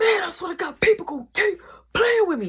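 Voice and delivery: mock worked-up angry outburst, very high. Retelling going to the back and slamming a hand on the wall, retelling getting riled up. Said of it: "Now I'm getting riled up".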